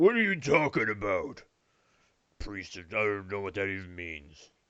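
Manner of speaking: great big, deep voice, dropped low. Voicing an unseen figure heard from inside: great deep voice. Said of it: "a great deep voice who goes".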